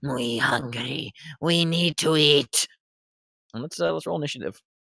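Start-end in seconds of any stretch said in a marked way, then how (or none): 0.0-2.7 very slow, drawn-out rat swarm voice. The game master voices the rat swarm speaking inside the players' heads. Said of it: "you hear that voice in the back of your heads go".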